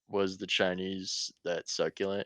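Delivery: ordinary talk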